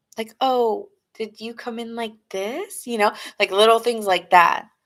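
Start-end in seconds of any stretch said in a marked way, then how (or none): 0.4-2.9 coy, teasing, put-on seductive flirty voice. Describing how someone seduces with little things: imitating a flirty tease. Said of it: "they do little things to seduce you".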